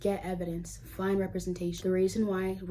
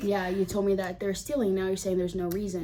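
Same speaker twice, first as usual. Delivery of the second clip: ordinary talk, nothing marked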